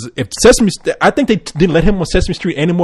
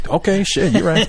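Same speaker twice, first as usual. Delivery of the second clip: ordinary talk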